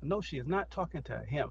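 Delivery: ordinary talk, nothing marked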